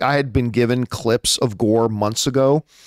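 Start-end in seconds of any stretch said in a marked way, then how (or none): none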